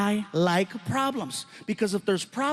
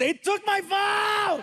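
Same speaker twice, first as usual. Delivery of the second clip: play-acted child's yell, very high and drawn out; 12 semitones higher than usual. Retelling how a son, not getting his way, yelled at the ground: imitating son yelling. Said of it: "he yells at the ground and he goes".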